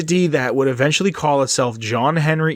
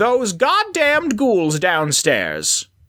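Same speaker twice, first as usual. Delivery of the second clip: high, swooping character voice rising, sneering at the end; 7 semitones higher than usual. Asked to do the Tenpenny voice one more time, Tenpenny character voice. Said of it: "can you do your Tenpenny one more time?".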